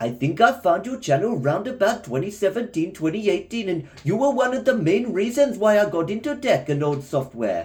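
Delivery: attempted Indian accent. Reading someone's message about the channel aloud in a put-on Indian accent. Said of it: "this is me trying to do an Indian accent".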